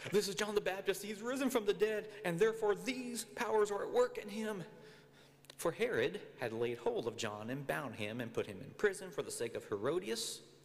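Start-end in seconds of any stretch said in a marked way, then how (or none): 0.1-4.6 high voice full of terror. Reading a Gospel passage, voicing the tetrarch speaking to his servants, in a terrified voice. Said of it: "in the terrified voice".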